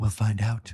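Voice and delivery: low, quiet, soft, short mutter. Retelling what a guest answered about smoking: David Carradine impression. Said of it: "he's talking like this, David Carradine".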